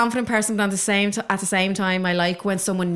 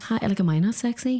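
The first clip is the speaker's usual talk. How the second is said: put-on soft, flirty, sultry voice; 2 semitones higher than usual. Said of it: "Little homie wanted, like".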